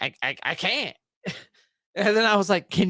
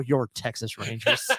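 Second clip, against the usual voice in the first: put-on mutter under the breath, lower and quieter; 8 semitones lower, 4 dB quieter than usual. Retelling a line heard during a football broadcast, imitating Joe Buck muttering under his breath. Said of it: "you hear Joe under his breath go".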